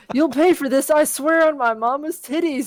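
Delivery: high-pitched crying out. Reading a story aloud, as the king, high-voiced scream. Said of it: "the king screams in a high voice".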